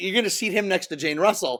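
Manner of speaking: usual speaking voice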